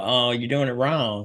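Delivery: Texan accent impression. Quoting a boxing coach correcting the speaker, in a put-on Texas accent. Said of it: "I do my Texas accents".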